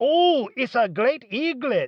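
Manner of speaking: put-on Chinese accent, high pitched and slow. Doing an impression of a man, imitated Chinese accent. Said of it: "I do an impression of a Chinese guy trying to say great egret".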